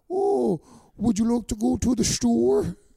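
put-on Dutch accent. Explaining how to do a Dutch accent and giving an example, Dutch accent. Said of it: "how to do a Dutch accent".

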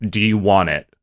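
mock flat, deadpan delivery. Retelling being offered a pet snake, imitating a deadpan question. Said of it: "In this very deadpan way".

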